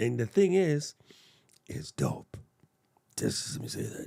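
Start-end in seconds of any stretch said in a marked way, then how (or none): 1.7-4.1 hushed, breathy superhero voice. Telling viewers about a release coming tomorrow morning, Batman voice. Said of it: "Sounding like Batman".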